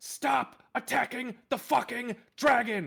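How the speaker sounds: acted screaming, yelling. Playing a character running while screaming at the others: in-character screaming. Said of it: "he's gonna start just screaming".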